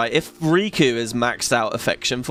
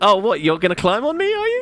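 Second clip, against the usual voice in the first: put-on affectionate character voice, higher; 7 semitones higher than usual. Joking about how close Rikku's line sounds: imitating Rikku getting close. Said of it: "she gets all close and she's like".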